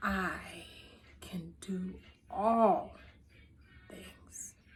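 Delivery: halting, very slow, one word at a time, spaced apart. Showing you don't have to say it fast: slow, one word at a time. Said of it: "I don't have to say it fast... just one word at a time".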